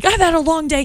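acted woman's scream. Retelling how an older woman in an office screamed at her, retelling a scream. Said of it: "she's screaming at me".

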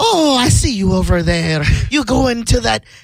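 full put-on Irish accent, pitched very high. Describing the Irish female who argues, imitating an Irish accent. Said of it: "she's like Irish, so it's funny she'll have her whole accent".

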